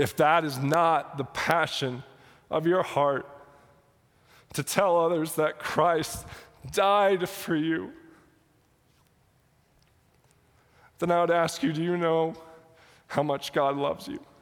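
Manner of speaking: fighting off crying. Speaking about bringing the gospel every day, the speaker asks listeners: trying not to cry. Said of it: "I'm trying not to cry".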